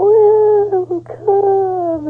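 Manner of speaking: strange, very high-pitched little voice. Retelling a channeling session, imitating a very high-pitched voice. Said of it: "I'll try and do an impression, it won't be very good".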